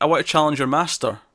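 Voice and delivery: ordinary talk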